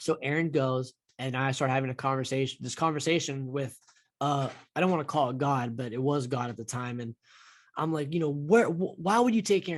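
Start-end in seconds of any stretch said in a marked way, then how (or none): 8.3-9.8 play-acted screaming, crying out, overcome with emotion. Retelling screaming out loud to a voice in the shower: imitating own past screaming. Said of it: "screaming out loud to this, like, voice".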